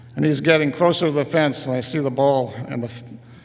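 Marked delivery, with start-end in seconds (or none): none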